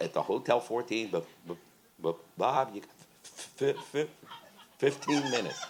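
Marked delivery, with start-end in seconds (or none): 1.1-5.6 stammering, repeated first sounds. Retelling the sound man's calls: imitating Doug stuttering. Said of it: "And Doug stuttered".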